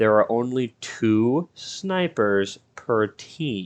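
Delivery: very slow, deliberate, word-by-word emphasis. Explaining how many snipers each team gets, said slow. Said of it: "I'm going to say this slow".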